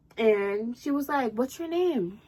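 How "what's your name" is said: put-on serious, inquiring tone. Retelling how a girl asked her name: imitating a serious, questioning tone. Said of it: "she said it in such a serious".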